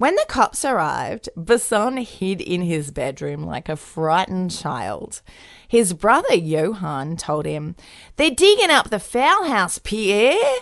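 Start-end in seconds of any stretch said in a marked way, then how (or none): 8.2-10.4 put-on Australian accent, pitched up. Storyteller quoting Johan telling his brother Pierre the news, in an Australian accent. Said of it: "the Australian accent".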